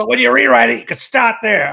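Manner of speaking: put-on New York accent, cigar in mouth. Retelling what a man said after circling one line with a red pen: imitating a New York accent. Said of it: "He goes".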